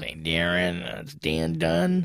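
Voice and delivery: very slow, rough voice. Retelling a morning phone call from a comic: imitating Dan Dunn's rough voice. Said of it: "He's a really rough voice".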